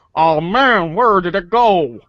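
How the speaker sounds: put-on cartoon alien voice. After announcing a voice switch while playing the game, speaking in Zoidberg voice. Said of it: "switch over my voice to Zoidberg".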